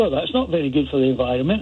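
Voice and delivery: plain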